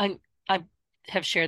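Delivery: stammering, stumbling over words. Starting to answer the other speaker on a podcast, stuttering. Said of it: "I'm stuttering again".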